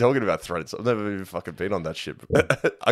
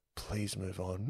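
put-on under-breath mutter, much quieter, slower; 15 dB quieter than usual. Retelling what a woman in the front row said, muttered under her breath. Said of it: "Under her breath".

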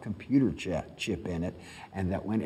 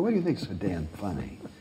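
put-on ribbing, joking-around, playful teasing. Retelling how you teased your aunt for laughing upstairs: retelling a teasing question. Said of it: "I was teasing her".

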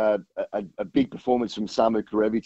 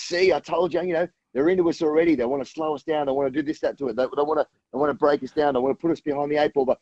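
small, high, whiny voice, pitched up; 5 semitones higher than usual. Retelling how he spun a customs bag search: whiny Eddie Jones voice. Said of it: "he's got this little whiny voice".

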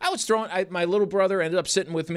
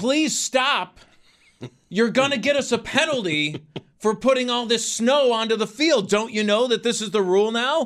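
mock, mild half-yell, pitched high; 5 semitones higher than usual. Recalling the snow in the fourth quarter, retelling own yelling at the sky. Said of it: "I'm yelling at the sky".

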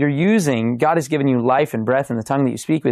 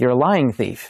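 normal talking voice

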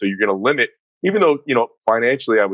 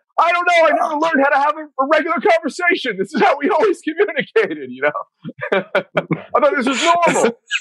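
mock screaming. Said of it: "angry and screaming".

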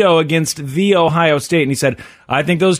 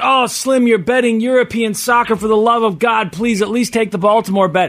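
put-on mocking, jabbing tone; 4 semitones higher than usual. Retelling how the listener mocked him on a phone call, retelling a mocking jab. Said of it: "you mocked me last week".

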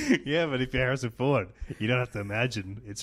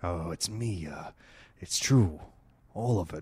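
put-on, very low, deep, dropped actor voice; 7 semitones lower, 3 dB quieter than usual. Answering a request to do an impression of Harrison Ford. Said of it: "Do an impression of Harrison Ford right now".

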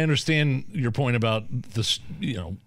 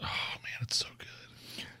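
very quiet, soft, hushed, breathy whisper. Describing the bread at a restaurant: whispering like Joe Biden. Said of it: "I just whispered like Joe Biden".

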